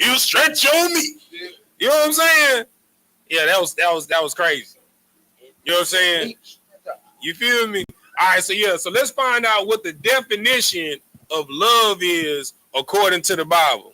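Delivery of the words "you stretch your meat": heavy put-on godlike voice, pitched high. Acting out the Lord replying to a joke prayer, with bass in his voice. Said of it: "he put some bass in his voice".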